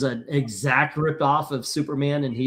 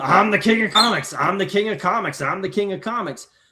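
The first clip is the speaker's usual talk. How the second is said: high, swaggering, boastful crowing and strutting; 5 semitones higher than usual. Retelling how a boss walked around boasting: imitating Victor Fox strutting. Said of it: "He walks around".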